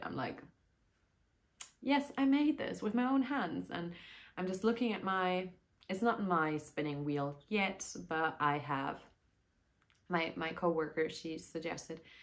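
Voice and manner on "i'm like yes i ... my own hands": moved, tearful, high, raised voice. Talking about her first hand-spun skein, tearing up a bit. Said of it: "when I'm tearing up a bit".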